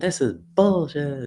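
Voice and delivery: put-on very high, shrill screamed outburst. Retelling what an agitated man at the scene shouted: imitating him screaming. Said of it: "he's screaming".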